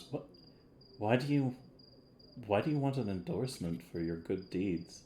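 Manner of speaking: puzzled, stumbling, quizzical tone. Voicing a character who questions a player's request: quizzical questioning tone. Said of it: "she looks really, like, quizzically at you and goes".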